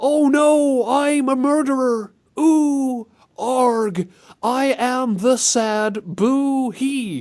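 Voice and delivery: deliberately bad, hammy voice acting, very high, loud. Speaker joking around while tired of recording: bad video-game voice acting. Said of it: "bad voice acting in video games".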